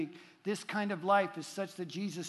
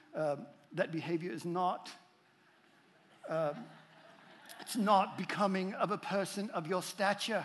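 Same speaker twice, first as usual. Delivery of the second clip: slow, unhurried, slight put-on British accent. Repeating what the speaker used to tell the kids, slight put-on British accent. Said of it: "I would attach a little British accent to it, like".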